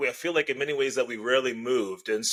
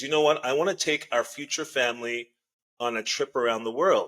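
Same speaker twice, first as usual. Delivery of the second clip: ordinary talk, nothing marked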